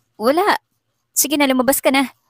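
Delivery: stammering. Embarrassed, she tells someone to go out, stammering. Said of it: "Saad na nauutal".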